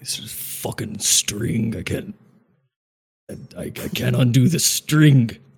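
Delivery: mock slow mumble. Recounting what Quill said while turned around over there, imitating Quill mumbling. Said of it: "he's over there like mumbling like".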